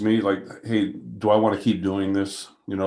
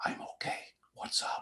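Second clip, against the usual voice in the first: hushed whisper, very quiet, barely above breath. Out in the woods with a hunter, he answers his boss's call: whispering. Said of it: "I'm whispering to him".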